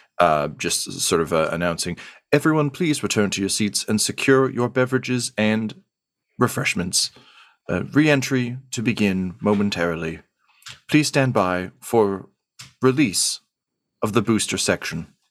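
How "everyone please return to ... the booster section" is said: overly polite, courteous intercom announcement voice. Narrating a scene, the speaker voices an intercom announcement: overly polite intercom voice. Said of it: "one of those overly polite intercom voices".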